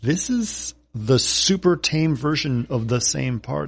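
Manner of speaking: ordinary talk, nothing marked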